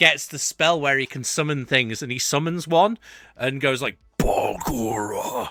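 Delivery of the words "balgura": low, deep, dropped put-on character voice. Retelling a summoning moment from Critical Role: Fjord's low voice. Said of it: "the low voice".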